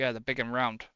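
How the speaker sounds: put-on dry, sarcastic commentator tone. Retelling a remark heard on commentary: imitating Brundle's sarcasm. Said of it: "I did like a bit of sarcasm".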